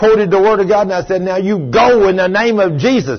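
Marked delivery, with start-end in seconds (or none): 1.2-3.2 forceful, said with force. Recounting driving out a devil in their pickup, the speaker re-enacts their scream. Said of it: "I was screaming it at the top of my lungs".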